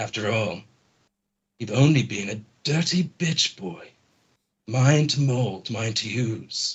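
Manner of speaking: echoing put-on voice, every word echoed. Lavog speaks through illusory copies circling Arlington, in Lavog's voice, echoing. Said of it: "echoing Lavog's voice".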